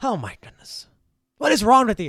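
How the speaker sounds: very loud, high, swooping elf-voice yell. Voicing an elf whose room is being blown apart: elf yelling. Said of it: "he's yelling at them still from behind".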